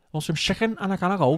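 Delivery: put-on Liverpool Scouse accent. Showing the phrase a comedian uses for a Scouse accent: Scouse accent. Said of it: "See, I couldn't do that".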